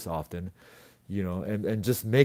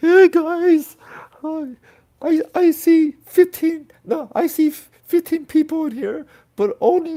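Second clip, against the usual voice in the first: put-on, very high, loud blubbering fake crying; 7 dB louder than usual. Speaker asking the audience for more thumbs up, in a fake crying voice. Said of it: "new crying voice".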